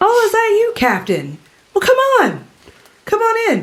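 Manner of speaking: very high, swooping, beckoning woman's voice. Voicing someone calling from a cave mouth: woman's voice calling out. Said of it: "the voice of, like, a, a woman speaking in Orcish".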